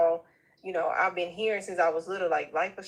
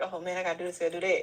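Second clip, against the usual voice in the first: anxious, flustered, panicky inner voice. Retelling own thoughts when rent is due: imitating own panic. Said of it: "I'm panicking 'cause I'm like".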